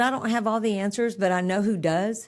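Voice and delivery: ordinary talk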